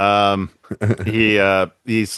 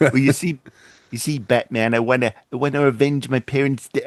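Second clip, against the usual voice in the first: halting delivery, repeating words and restarting; 4 semitones higher than usual. Joking about Batman's avenged parents, accidentally sounding like Woody Allen. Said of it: "I sound like Woody Allen now".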